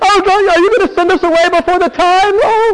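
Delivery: very high, loud, fawning, groveling begging tone. Acting out demonic people begging Jesus, imitating their groveling plea. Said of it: "grovel on the floor".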